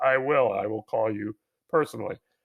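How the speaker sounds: flat, level, stilted, machine-like robotic voice. Pretending a billionaire is calling about a delayed satellite: Elon Musk impression. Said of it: "Did that sound like him?".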